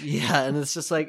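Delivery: plain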